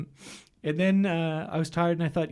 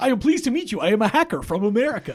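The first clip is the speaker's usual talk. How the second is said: loud, very bad fake American accent; 4 semitones higher, 5 dB louder than usual. Imitating an actor in a film: bad American accent. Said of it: "he's talking like this the entire".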